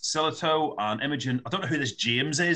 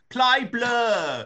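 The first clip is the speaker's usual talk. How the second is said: put-on Cockney London accent; 10 semitones higher, 4 dB louder than usual. Telling how they ask Siri for music while driving on the motorway, really Mockney accent. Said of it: "putting on this really Mockney accent".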